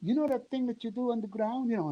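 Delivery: put-on French accent. Speaker quotes a woman asking him for a take, French accent. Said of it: "in her French accent".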